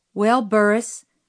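plain reading voice

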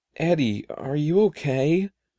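wavering, quavering, trembling voice. First-person narrator reading a story, asking Eddie in a quivering voice. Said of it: "I asked in a quivering voice".

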